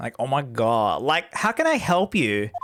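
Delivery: low voice in full valley-guy speech style. Asking whether to do the valley guys, then trying it: valley guy voice. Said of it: "do I do the valley guys?".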